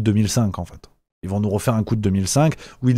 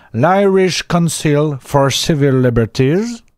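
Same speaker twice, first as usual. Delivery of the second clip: slow put-on English accent on one word; 4 semitones higher, 5 dB louder than usual. Reading out an Irish organization's name in a French video: English accent. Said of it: "mon accent anglais va faire la différence".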